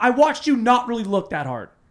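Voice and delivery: very high-pitched, panicked and angry tone. Retelling arguing with a friend over lost keys: retelling angry panic. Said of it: "panic, angry".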